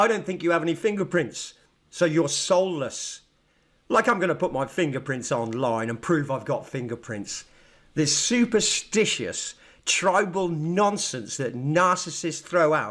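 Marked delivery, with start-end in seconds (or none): 0.0-3.2 acted, smug, self-important, narcissistic tone. Retelling what another speaker just said: imitating a narcissistic tone. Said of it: "he just said it in a narcissistic way and went".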